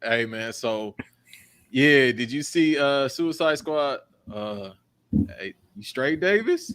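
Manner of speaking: talking like a zombie. Teasing the other speaker about how they will sound: imitating someone talking like a zombie. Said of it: "you gonna be talking like a zombie".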